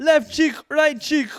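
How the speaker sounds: put-on high, loud Ghanaian accent. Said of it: "he goes".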